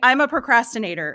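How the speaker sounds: firm, certain, definitive tone. Self-description said without hesitation, unlike other traits: firm, certain statement. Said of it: "you can even hear in my voice when I say I'm a procrastinator, that is definitive".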